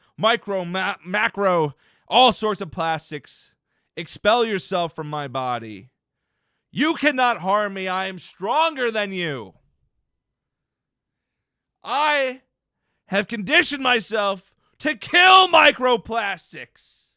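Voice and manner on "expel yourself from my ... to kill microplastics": forceful commanding tone, higher and louder. Ordering microplastics out of the body, forceful command to microplastics. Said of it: "exactly as how I said it in that exact tone".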